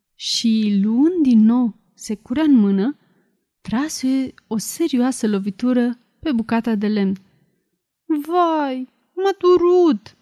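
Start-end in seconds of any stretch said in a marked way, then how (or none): 8.1-10.0 high, drawn-out wailing scream of pain, "vai" stretched. A small voice from a piece of wood struck with an axe, screaming and wailing. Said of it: "Țipă văitându-se glășciorul cunoscut".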